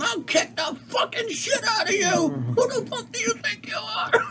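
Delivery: very high, shrill, furious mobster-voice screaming rage. Retelling a mobster's outburst at a priest, imitating a mobster screaming. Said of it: "starts screaming and yelling".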